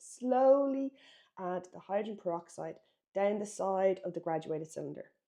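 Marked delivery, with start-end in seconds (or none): 0.0-0.9 "slowly" stressed, high pitched and loud. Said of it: "Very, very, very important".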